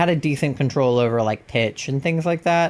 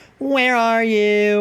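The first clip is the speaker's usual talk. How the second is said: playful, jokey put-on emo voice, pitched up; 8 semitones higher than usual. Offering Pasta a choice of emo voices, trying the jokey emo voice. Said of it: "The, like, jokey emo voice?".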